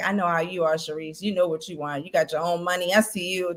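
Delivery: put-on muttering, mumbled voice. Imitating how a man talks under his breath to her: imitating Mike talking under his breath. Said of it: "he talks under his breath".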